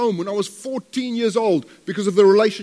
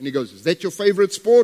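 normal talking voice

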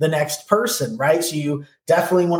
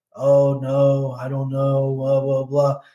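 slow, listless, low-toned, low-energy voice; 3 semitones lower than usual. Describing a client on the phone: imitating a low-energy, low-tone client. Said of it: "They're very low tone. They're very low energy".

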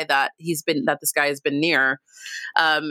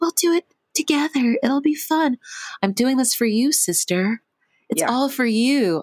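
put-on eerie, creepy little-girl voice, pitched up high; 8 semitones higher than usual. Recapping a character, Amani, talking to herself, Amani's little girl voice. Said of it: "she's literally kind of sounds like a little girl".

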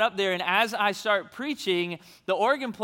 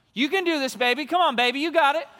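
mock cheering, high and encouraging; 6 semitones higher than usual. Retelling a lady on the front row calling out: imitating a woman yelling encouragement. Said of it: "she just yells out".

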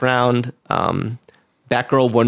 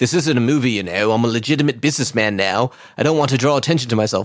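put-on cockney character voice. Retelling a story, voicing the Penguin refusing to gamble, in a Cockney accent. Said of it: "I'm giving him a Cockney accent for some reason".

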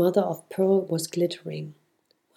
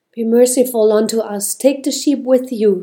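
full-voiced, very loud cry; 4 semitones higher, 8 dB louder than usual. Narrator reading a soldier's line to the others: crying out. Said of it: "he cried".

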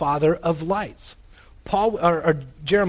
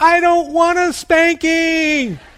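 put-on very high, very loud, shrill child screaming; 12 semitones higher, 8 dB louder than usual. A father retells his daughter looking at him and screaming, imitating a child screaming. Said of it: "she starts screaming".

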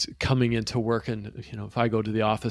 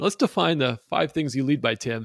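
lightly sarcastic put-on tone; 4 semitones higher than usual. Acting out going into a client to unlearn leadership, put-on sarcastic tone. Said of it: "I'm being a little sarcastic there".

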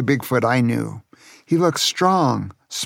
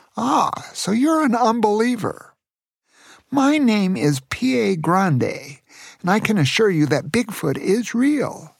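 put-on small, high, squeaky old-man voice; 7 semitones higher than usual. Reading a story aloud, an old man speaking: little squeaky voice. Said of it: "responded with his little squeaky voice".

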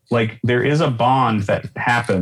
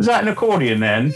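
put-on Welsh accent, pitched a bit high; 5 semitones higher than usual. Retelling what a man asked on seeing your travel accordion, in a Welsh accent. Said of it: "he says in that Welsh accent".

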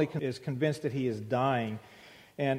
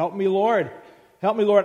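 very loud, high, desperate pleading scream; 5 semitones higher, 8 dB louder than usual. Describing a film's final scene where a swimmer calls to God, retelling a character's scream. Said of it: "he just screams out".

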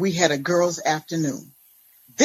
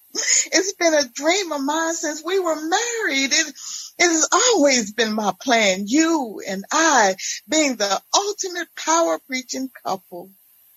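giddy, excited, pitched-up gushing voice; 9 semitones higher than usual. Narrating a novel, voicing an ex-wife's phone message to her former husband, giddy. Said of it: "Their smooth sailing life is erratically disturbed with [name]'s ex-wife appearing from a time of psychiatric hospitalization and joins the church where she was once the first lady".

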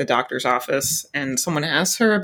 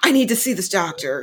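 mock mumbling, bumbling and screaming male voice; 3 semitones higher than usual. Describing an aggressively mean, high-energy man, imitating his mumbling and screaming. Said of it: "mumbling and screaming and bumbling".

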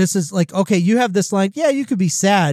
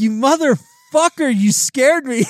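put-on angry yelling outburst; 6 semitones higher than usual. Speaker retells yelling at someone who had scared him, acting out past anger. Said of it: "I was pissed".

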